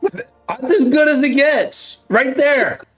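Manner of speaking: high, drawn-out, excited yelling.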